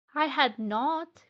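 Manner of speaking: loud, sharp, very angry cry. Reading a story aloud, the Mouse retorting to Alice, sharp and very angry. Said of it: "cried the Mouse sharply and very angrily".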